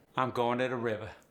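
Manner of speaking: Cajun English accent. Repeating the teacher's example line: cajun accent. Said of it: "This Cajun R drop".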